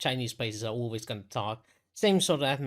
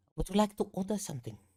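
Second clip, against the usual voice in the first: put-on Chinese accent, broken English, pitched up; 8 semitones higher than usual. Describing a candlelit restaurant, voicing the waiter who bows to you: put-on Chinese accent. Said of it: "that's a Chinese accent".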